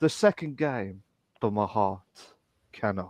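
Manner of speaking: put-on theatrical old-style delivery. Showing how a line sounds in a Shakespearean version: Shakespearean delivery. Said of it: "trying to do the Shakespearean version".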